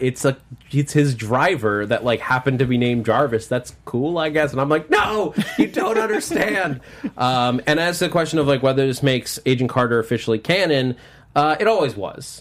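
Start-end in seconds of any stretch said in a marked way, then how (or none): 4.9-6.8 mock screaming, much higher. Retelling reacting when nobody else understood why: retelling own scream. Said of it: "no one else knows why I'm screaming".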